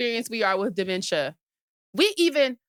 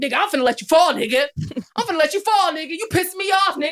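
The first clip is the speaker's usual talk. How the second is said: heated, insistent, argumentative back-and-forth voice; 4 semitones higher, 4 dB louder than usual. Imitating Darrington arguing with the speaker's dad: imitating Darrington arguing. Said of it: "So he be arguing. He like".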